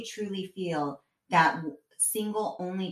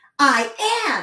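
very loud, high, shouted yell; 7 semitones higher, 9 dB louder than usual. Retelling what she yelled back when told to get in the car, retelling a yell. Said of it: "she kind of like yells back to me".

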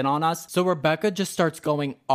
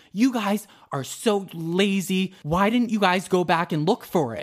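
angry, scolding, ranting delivery; 4 semitones higher than usual. Retelling how a woman yelled at them over a lost item, retelling her angry yelling. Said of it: "She's fucking yelling at us".

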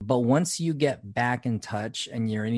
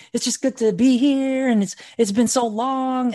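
high, loud giddy gush. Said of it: "she's all giddy".

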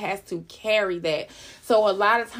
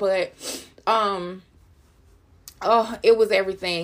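crying while talking, tearful voice.

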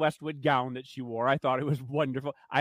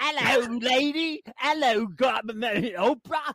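slow, heavily exaggerated Cockney accent; 8 semitones higher than usual. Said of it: "She sort of plays up the Cockney accent, like".

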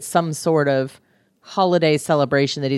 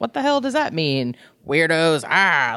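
put-on annoyed man voice. Retelling a book scene where a character meets a stranger: imitating an annoyed man. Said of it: "he's annoyed".

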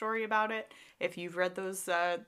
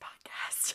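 hushed, secretive whisper. Imitating the other speaker's whispered podcast sign-off: imitating a whisper. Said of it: "You were like".

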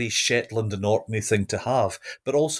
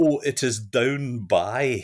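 slow, careful, put-on proper English. Retelling answering new students who asked for the library: imitating own best english. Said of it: "in my best English".

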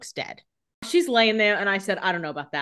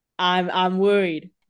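ordinary talk, nothing marked

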